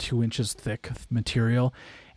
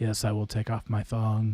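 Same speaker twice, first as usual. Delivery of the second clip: soft, dazed, entranced voice; 4 semitones lower, 6 dB quieter than usual. During a live stream, acting out someone in a trance: mock trance voice. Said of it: "you're like in a trance".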